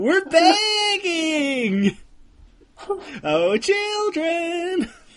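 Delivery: very high, very slow, pleading, drawn-out words. Imitating a contestant's line shown in the episode: Denise impression. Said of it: "crack out all these impressions again".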